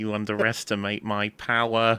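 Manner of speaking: nerdy-sounding voice. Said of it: "read a few Anakin lines with your best impression of Moss".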